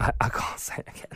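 unvoiced hushed whisper, sounding too upset to speak.

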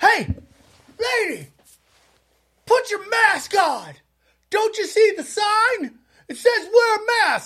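high, shrill, acted-out screaming. Retelling a masked man screaming at an unmasked woman, imitating a man screaming. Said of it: "This dude starts screaming at her".

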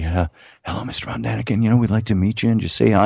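put-on sheepish voice. Retelling a young couple approaching a man on a bench, imitating a sheepish greeting. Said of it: "very sheepishly".

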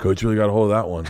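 put-on, completely straight, dead serious deadpan. Retelling what a daughter answered: imitating someone dead serious. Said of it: "looks at me dead serious and goes".

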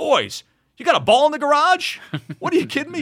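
mock yelling. Retelling how someone called out to the boys leaving: imitating someone yelling. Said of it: "Witt yells out".

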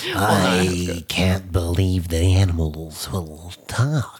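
low, slithery lizard villain dragon voice, stretched I. Given a Komodo dragon to voice by the other speaker: Komodo dragon voice, bit Joker-ish. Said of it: "a little jokerish".

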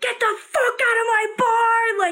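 screaming, high and long. Retelling a bartender throwing a guy out of his bar, imitating a screaming bartender. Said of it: "he's like screaming at this guy".

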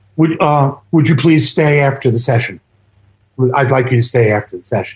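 serious, low, deadpan delivery with no joking. Retelling how Robert asked to stay after the session: imitating Robert's straight-faced request. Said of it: "he's very straight-faced".

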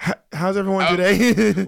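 put-on nervous laughter while talking. Mocking people who laugh nervously at the end of sentences: imitating a nervous laugher. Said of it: "people who laugh at the end of their sentences".

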